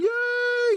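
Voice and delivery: high, loud mock cheer. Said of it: "I can hear some of you going".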